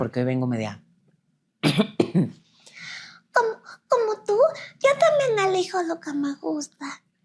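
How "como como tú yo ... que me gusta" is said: put-on very high, sing-song babyish voice. Showing she can still do baby voices, as if selling diapers, baby voice. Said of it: "voces de bebés".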